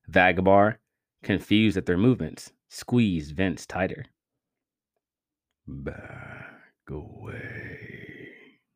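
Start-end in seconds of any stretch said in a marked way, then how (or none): 5.7-8.6 hushed, hissed, barely voiced whisper. A captor holding a hostage warns the others off: hissed. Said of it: "he hissed".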